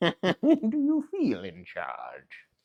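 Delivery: slow, loud, drawn-out, menacing, threatening voice. Retelling a movie scene where Bane squeezes a man: menacing Bane voice. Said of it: "so scarily and menacingly".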